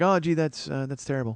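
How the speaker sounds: mock indifferent, offhand, uncaring, going-through-the-motions tone. Retelling how the wife reacted to the jury news: imitating an uncaring tone. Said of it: "she doesn't even care".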